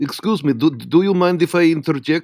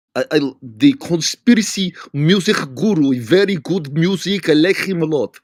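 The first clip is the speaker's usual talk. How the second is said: English with a Russian accent. Chatting with others about a music guru, Russian accent. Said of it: "are you totally faking your Russian accent".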